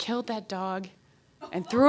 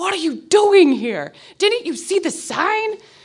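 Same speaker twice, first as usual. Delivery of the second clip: angry, pissed-off voice, pitched up; 7 semitones higher, 3 dB louder than usual. Retelling how a homeowner barged out the door: imitating a pissed-off man. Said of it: "is pissed off".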